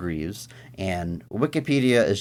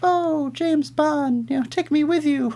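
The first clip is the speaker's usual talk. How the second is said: put-on young woman voice, pitched very high. Talking about Bond films, the speaker does a young woman impression. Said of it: "that's my impression of a young woman".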